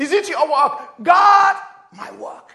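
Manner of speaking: very loud, fired-up, excited preaching cry. The speaker addresses listeners, shouting excitedly. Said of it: "I'm shouting like an African man now".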